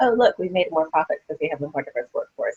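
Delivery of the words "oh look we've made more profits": plain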